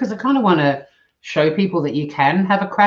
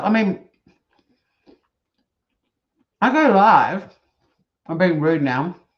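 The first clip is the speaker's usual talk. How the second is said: talking with mouth full, slower. Talking to viewers while chomping on food, talking with a big mouthful. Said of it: "Seriously talking with a big mouthful".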